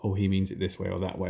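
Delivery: plain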